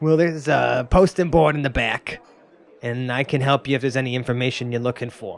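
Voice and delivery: odd, strange, put-on New York accent. Voicing a shopkeeper answering newcomers: weird New York accent. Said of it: "keep rocking this weird, like, New York".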